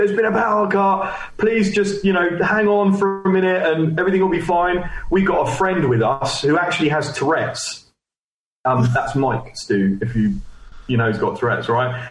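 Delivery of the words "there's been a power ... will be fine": mimicked shouting, much higher. Retelling a power cut at a venue, imitating a shouting venue manager. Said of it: "he's shouting to everyone".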